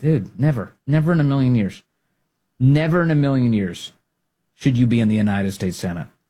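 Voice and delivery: ordinary delivery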